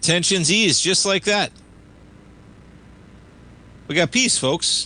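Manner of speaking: mock-cheerful sarcastic tone. Market show host reacting to news of airspace reopening, sarcastic. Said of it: "I say it sarcastically".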